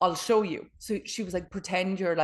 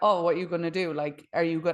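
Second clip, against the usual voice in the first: mocking, belittling, taunting tone. Retelling a friend who went into character during a class: imitating someone belittling. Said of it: "started belittling her".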